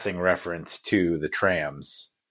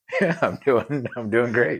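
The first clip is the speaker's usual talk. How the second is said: speaking with giggles throughout; 6 semitones higher than usual. Answering his co-host's greeting at the start of a podcast, giggling while talking. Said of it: "you're giggling again".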